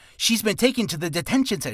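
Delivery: rattled off at speed. Speaker demonstrating a tongue twister for listeners, saying it fast. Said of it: "So try saying that faster".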